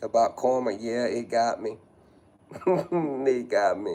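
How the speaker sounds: slow, fighting tears while getting words out. Telling viewers that karma got them: holding back tears. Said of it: "holding back tears from crying".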